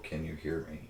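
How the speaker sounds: hushed, half-whispered stage whisper. Voicing a knight calling to his god through a sigil: half-whispering. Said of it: "just whispers in Celestial".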